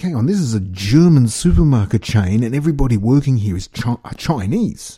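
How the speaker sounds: ordinary talk, nothing marked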